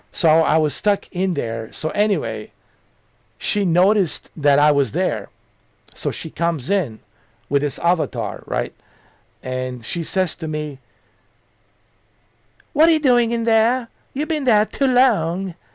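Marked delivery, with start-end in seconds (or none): 12.8-15.6 high put-on British accent. Quoting what she said on noticing the speaker stuck there, british accent. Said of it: "with her British accent".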